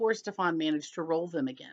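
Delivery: ordinary delivery, nothing marked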